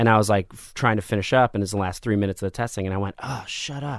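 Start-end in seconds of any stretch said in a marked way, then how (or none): 3.2-4.0 hushed under-breath mutter, almost inaudible. Retelling what he said during the last minutes of a standardized test, retelling an under-breath mutter. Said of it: "I said it under my breath".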